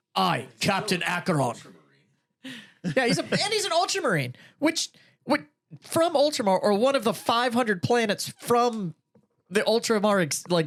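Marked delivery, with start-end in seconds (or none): 0.1-1.5 put-on, poor, weak, unconvincing Scottish accent. Mocking a game character's voice: imitating Captain Acheron's bad Scottish accent. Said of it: "not even a good Scottish accent either".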